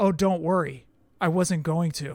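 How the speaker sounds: mock flat, low delivery. Retelling how the man signing the figure answered the joke, retelling a deadpan reply.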